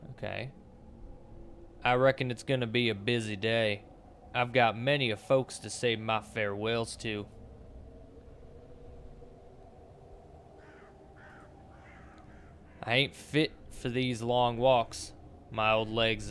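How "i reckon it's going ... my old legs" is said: put-on Southern accent. Reading on-screen dialogue lines aloud in a put-on Southern accent. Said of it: "I'll give it a southern accent".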